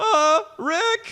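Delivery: very high, put-on cartoon character voice. Asked by the others to do the characters, showing a Morty voice. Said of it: "Morty's kind of like".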